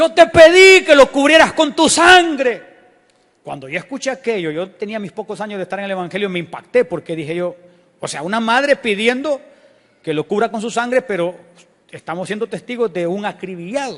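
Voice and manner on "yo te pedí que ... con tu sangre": anguished, desperate, loud, drawn-out crying out. Retelling a mother's cry to god over her dead son: imitating a mother shouting to god. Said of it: "Y gritaba diciendo".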